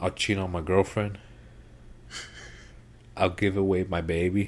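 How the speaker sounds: usual speaking voice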